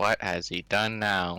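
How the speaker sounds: muttering and mumbling under his breath. A character shakes his head at someone else's mess, muttering under his breath. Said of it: "mutters under his breath".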